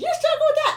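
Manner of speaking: high, loud, incredulous, disbelieving tone.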